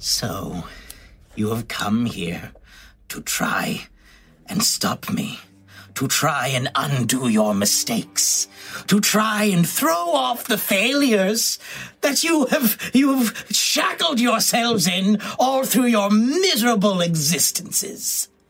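oscillating, quivering, vibrating, swooping voice. Describing a scene, the speaker gives the spider queen's words to the listeners in a vibrating spider queen voice. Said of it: "oscillating sound forms the voice of the spider queen".

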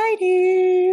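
high, loud, dramatic belted announcement. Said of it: "I don't know why I say it like that".

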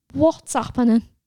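insistent, demanding. Lily questions River, who has just cupped her face, demanding. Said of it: "She demanded".

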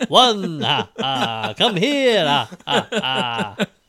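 booming voice, slow, each ah sound stretched out. Joking that someone sounded like Count Dracula: Count von Count voice. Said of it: "That's the Count".

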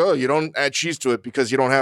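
ordinary delivery

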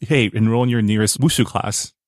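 ordinary delivery

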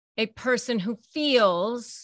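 feels stressed, slow and drawn out.

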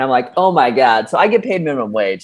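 ordinary talk

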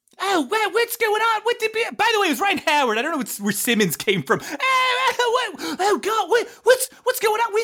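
confused, panicked outburst, high-pitched and shouted.

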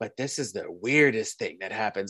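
low, eerie, creepy, unsettling character voice. Describing a favourite series, the speaker quotes the character: Dr. Curdle Jr. creepy voice. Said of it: "he has that creepy voice".

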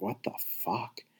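soft, unvoiced whisper.

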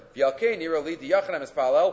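ordinary delivery

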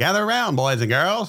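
put-on old-time radio announcer. Talking about families gathering around the radio: old-time radio announcer voice. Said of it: "Got to use the old time radio voice".

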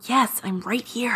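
soft, hushed, barely audible half-whisper. Answering someone who asks if she got in: half-whispering. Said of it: "You don't have to whisper".

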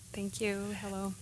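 very quiet, soft voice, barely projecting. Guest welcomed onto the program by the host: very quiet voice. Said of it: "I can already tell you're very quiet".

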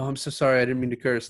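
play-acted, flustered, mortified, embarrassed backpedalling tone. Retelling a date in which she swears, then apologizes: imitating a flustered apology. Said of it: "almost completely shuts down, like".

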